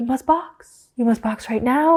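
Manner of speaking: composed, calm, put-on European accent. Podcast host quotes a message Kevin got during the race, in a European accent. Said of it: "like this like European accent".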